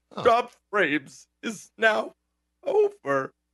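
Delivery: mock tearful weeping voice, high and swooping. Ending the stream by copying an old HBO kids' show sign-off, mock-weeping Brain Games voice. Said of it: "there's like this weeping voice".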